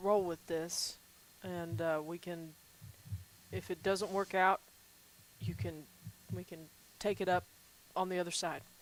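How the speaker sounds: very quiet, hushed, softly murmured aside. Role-player speaking in character to another character, very quiet. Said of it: "I'm going to say very quietly".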